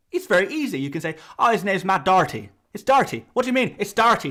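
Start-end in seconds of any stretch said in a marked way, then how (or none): 1.3-4.3 put-on Irish accent. Showing how doherty's name is easy to say in an irish accent: irish accent. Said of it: "If you say his name in an Irish accent".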